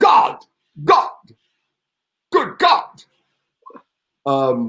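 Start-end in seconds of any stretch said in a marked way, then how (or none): 0.0-3.0 very high, exclaimed outcry. Showing how a film actor would say a word: Peter O'Toole impression. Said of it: "Peter O'Toole's style was he would say".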